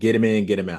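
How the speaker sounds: plain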